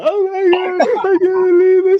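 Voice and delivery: hysterical, very high-pitched, loud cry. Acting out a boyfriend reacting to being dumped: acting out hysteria. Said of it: "And then he gets all hysterical".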